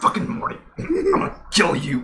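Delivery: breathy, whispered voice breathed out. Doing a Rick impression while yelling at Morty: Rick impression. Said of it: "pretty good, uh, Rick impression".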